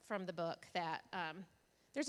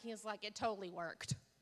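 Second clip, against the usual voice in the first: usual speaking voice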